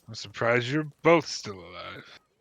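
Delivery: minotaur monster voice. The narrator voices the Minotaur speaking from inside the tent; Minotaur voice. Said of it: "And there's the Minotaur".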